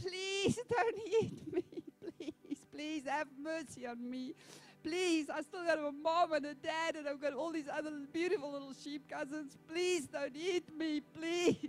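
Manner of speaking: crying, desperate pleading voice. Telling a story, voicing a little sheep lion caught by the big lion: begging and crying for mercy. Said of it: "begging and crying out for mercy".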